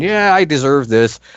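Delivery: loud screaming. Retelling a moment at a victory parade: imitating someone screaming. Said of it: "she's screaming".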